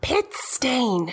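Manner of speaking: very quiet, barely audible whisper. Voicing a character muttering an insult to a companion: whispering very quietly. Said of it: "Lola whispers to Ezra really quietly".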